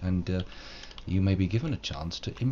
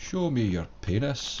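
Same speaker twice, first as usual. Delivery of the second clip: weak, half-hearted put-on Scottish accent; 4 semitones higher than usual. A jokey line delivered in a weak put-on Scottish accent. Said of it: "that's my uh, pretty weak Scottish accent".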